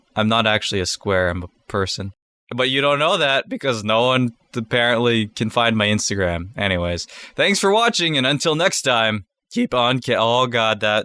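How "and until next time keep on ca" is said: cracking voice, breaking mid-word. Signing off at the end of a video, voice cracking. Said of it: "that was a voice crack".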